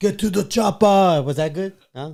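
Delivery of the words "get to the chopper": badly faked Austrian accent, pitched up. Asked on a call whether you know any accents, try a bad Arnold Schwarzenegger impression. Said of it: "you do Arnold Schwarzenegger?".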